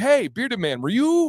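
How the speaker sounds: high, excited fan voice. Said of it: "and they were like".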